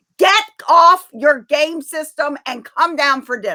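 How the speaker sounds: rude, aggressive, high-pitched screaming. Speaker retelling calling someone down to dinner the fourth time, retelling a scream. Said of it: "I'm screaming".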